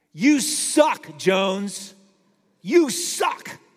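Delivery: very slow, loud, drawn-out yell. Retelling yelling at himself alone in a parking lot: imitating own yell. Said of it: "I yell as loud as I can to myself".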